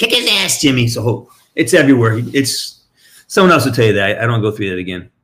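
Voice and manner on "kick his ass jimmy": high-pitched mock grandma yelling. Retelling grandma at a hockey fight: imitating grandma yelling. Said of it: "She's yelling at me".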